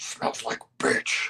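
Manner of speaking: put-on whispering voice. Putting words in another speaker's mouth: imitating a whisper. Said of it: "As she whispers".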